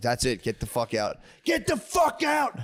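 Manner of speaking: put-on, drawn-out, swooping, rising angry outburst. Retelling what was said to a heckler on stage: retelling a freak-out outburst. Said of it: "And I spazzed".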